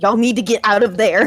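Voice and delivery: firm, adamant, insistent tone. Voicing a collapsed character warning the party: adamant in character. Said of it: "he's adamant".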